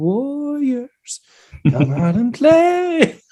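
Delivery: eerie, very high, slow, drawn-out sing-song taunt. Recalling voices calling over the racks during a 2 a.m. store reset, imitating a creepy voice. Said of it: "Just like creepy voices".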